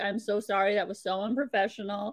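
ordinary talk, nothing marked

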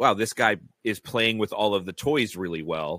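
normal talking voice

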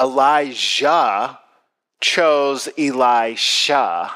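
drawn out, very slow, word by word. Speaker tells listeners a point that still confuses him, said slowly. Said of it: "so I'm going to say it slowly".

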